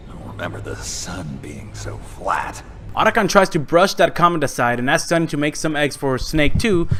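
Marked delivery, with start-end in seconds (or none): 0.1-2.6 very soft, slow, hushed, disgusted murmur. Narrating a scene where a character wakes up and speaks, disgusted voice. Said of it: "in a disgusting voice".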